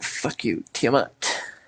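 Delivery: very soft, muttered, under-the-breath whisper. A player, asked what their character does, speaks in character: whispering under breath. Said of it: "Under my breath, whisper".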